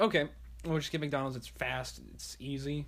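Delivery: ordinary talk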